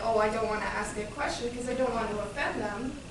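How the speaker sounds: ordinary talk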